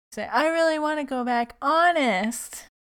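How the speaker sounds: put-on 1950s sitcom child voice. Describing how a character talks in a show, Beaver-style 1950s sitcom kid. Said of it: "They really have him speaking like the 50s kid in a sitcom".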